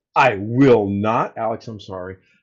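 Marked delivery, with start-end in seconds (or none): 1.4-2.2 mocking, insincere, heavily sarcastic delivery. Apologizing to Alex after being told to say sorry: sarcastic apology. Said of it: "the most sarcastic "I'm sorry"".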